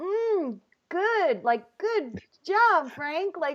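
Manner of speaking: high, forced, sweet fake politeness. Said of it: "And I'm just like".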